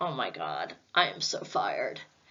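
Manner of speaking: mock speaking through tears. Retelling breaking down after the supervisor's call: retelling own tearful words. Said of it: "And I break down in tears".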